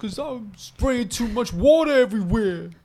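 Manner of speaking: very high, slow-motion delivery with every word stretched. Doing an impression for the others: Tracy Morgan impression. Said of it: "You didn't know I had a Tracy Morgan in me".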